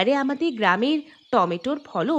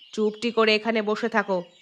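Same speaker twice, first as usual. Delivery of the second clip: ordinary delivery, nothing marked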